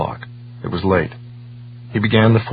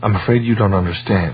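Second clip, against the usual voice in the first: plain reading voice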